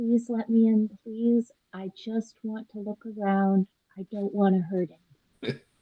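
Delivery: soft, close half-whisper, barely there. Voicing Blaze, up close to a locked door, half-whispering. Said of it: "and whispers".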